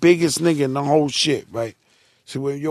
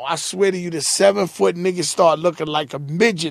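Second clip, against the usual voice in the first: usual speaking voice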